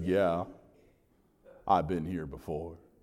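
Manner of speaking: deep, soft, low Southern drawl sinking into bass. Retelling a tour guide's question at Mount Calvary, the speaker answers in Dr. Lee's bass Southern drawl. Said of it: "in that classic bass Southern drawl of his".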